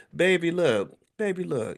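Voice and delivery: put-on sweet baby voice, high-pitched, slow and drawn out. Quoting a social media post, imitating Tabitha Brown's sweet baby voice. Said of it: "in her sweet baby voice".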